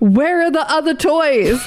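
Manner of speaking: acted-out scream. Telling a story, acting out a man screaming as he enters the store: retelling a scream. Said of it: "and just screams".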